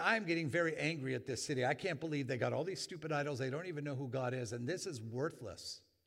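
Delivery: ordinary delivery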